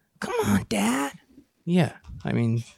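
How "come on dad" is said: bad, very high-pitched voice pushed way up. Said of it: "That's pretty bad".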